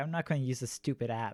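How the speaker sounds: ordinary talk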